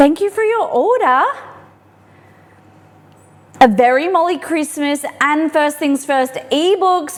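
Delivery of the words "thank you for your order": voice rising higher and louder. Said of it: "my voice goes really high".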